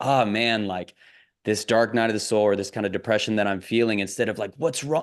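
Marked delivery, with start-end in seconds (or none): none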